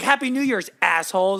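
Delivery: mock high, small half-yell kept quiet. Retelling how the lady yelled as they left: imitating someone yelling. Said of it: "the lady yelled at us".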